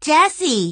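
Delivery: trembling voice. Violet calls jesse's name while searching among the mirrors, trembling voice. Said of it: "her voice trembling".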